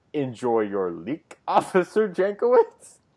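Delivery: mock laughter breaking up the words throughout. Quoting a comic villain's line while laughing through it: laughing while quoting. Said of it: "laughing through that whole speech that I was".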